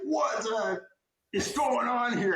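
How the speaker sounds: put-on, loud, high-pitched Brooklyn Italian accent. Retelling how a senior woken from his nap yelled at them: Joe Basil impression, loud Brooklyn Italian. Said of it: "Italian, big, loud, and he's like".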